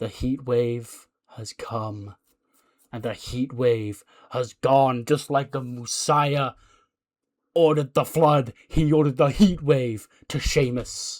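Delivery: slow, drawn-out preacher-style promo voice. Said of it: "And he goes".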